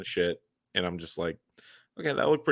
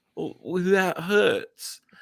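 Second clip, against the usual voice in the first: odd, weird, very high-pitched put-on British accent; 10 semitones higher, 3 dB louder than usual. Retelling a movie scene where a stabbed character speaks, in a weird British accent. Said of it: "its weird British accent".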